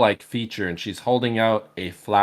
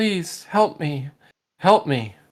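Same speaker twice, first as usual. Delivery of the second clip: high, pleading woman's voice, begging; 7 semitones higher than usual. Narrating a game scene to the players, voicing a woman. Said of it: "You can hear the woman's voice saying".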